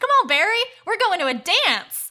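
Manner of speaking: high, loud, excited cheering voice. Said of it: "and she's like".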